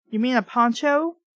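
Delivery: ordinary delivery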